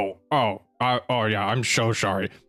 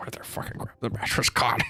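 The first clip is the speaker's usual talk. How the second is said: whispered, hushed muttering under the breath; 5 dB quieter than usual. Voicing a character walking out after covering a mattress: mumbling to himself. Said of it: "mumbling to himself as he walks out".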